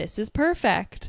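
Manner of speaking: usual speaking voice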